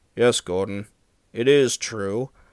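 ordinary delivery

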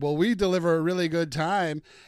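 loud, carefree, goofy, cheesy delivery. Retelling a guy's quip from a video, retelling a joking dad-joke tone. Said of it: "Just making a dad joke".

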